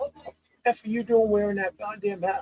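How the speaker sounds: mock very high, shrill, bawling-out yell. Retelling a coach scolding over a Raiders hat: imitating a coach yelling. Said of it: "he starts yelling at me".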